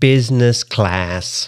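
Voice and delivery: attempted American accent. Coaching an Australian to say a phrase, in an American accent. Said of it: "Try to use an American accent".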